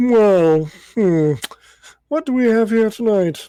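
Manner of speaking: nose-up haughty voice, high and loud. Narrating a scene, the speaker voices the concierge greeting two arrivals, snooty Kermit voice. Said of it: "It's Snooty fucking Kermit".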